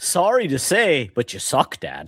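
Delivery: gentle, kind, regretful, sing-song, drawn-out delivery. A father retells what his son says to him while playing, imitating him saying it kindly. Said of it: "He will say it kindly".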